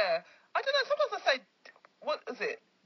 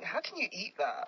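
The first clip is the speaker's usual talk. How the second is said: ordinary talk, nothing marked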